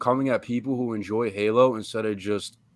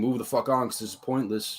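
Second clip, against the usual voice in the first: ordinary delivery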